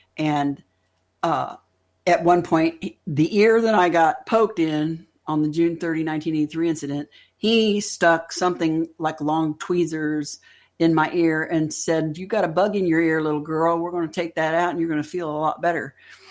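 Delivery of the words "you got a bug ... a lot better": put-on deep, loud Southern drawl. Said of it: "loud voice with a Southern drawl".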